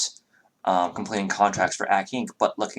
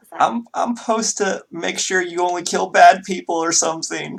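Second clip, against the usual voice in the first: very high, sniffling, tearful voice near crying; 10 semitones higher, 6 dB louder than usual. Playing Lydia, the speaker talks to Evelyn while sniffling. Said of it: "Lydia sniffs".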